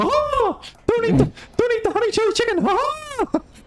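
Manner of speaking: very high-pitched cartoon character voice. Answering an offer of an impression: Mickey Mouse voice. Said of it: "Mickey Mouse impression".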